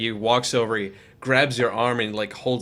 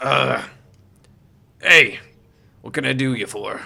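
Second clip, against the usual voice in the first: gruff, rough, creaky half-orc voice; 4 dB louder than usual. Voicing a half orc armory keeper greeting a customer: half orc shopkeeper voice. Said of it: "you see a half orc, he kinda greets you".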